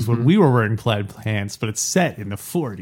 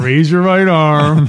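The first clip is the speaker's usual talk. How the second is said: impatient, loud, drawn-out, words spelled out; 4 semitones higher, 7 dB louder than usual. Imitating the other speaker's valet order: imitating an impatient order. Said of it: "that sounds very impatient".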